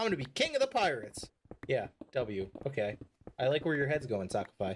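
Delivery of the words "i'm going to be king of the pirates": very high, loud yelled war cry. Describing a game emote where his character yells, imitating Luffy's yell. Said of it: "randomly yells in the Luffy voice".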